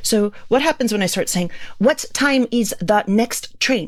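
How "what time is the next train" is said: careful enunciation, each word pronounced separately. Pointing to a blackboard for english learners, each word pronounced separately. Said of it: "I sound like I have an accent. That is exactly what an accent is. It's trying to pronounce each word".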